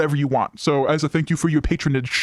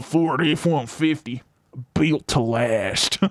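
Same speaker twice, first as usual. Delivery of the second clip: rural country voice. Reading a ford truck ad script aloud, in a country voice. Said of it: "I guess I have a good country voice".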